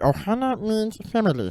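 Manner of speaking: high, loud throaty voice pushed into the throat. Showing a co-speaker the voice a partner said sounded like Stitch, Stitch voice. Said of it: "You're like putting your voice in your throat".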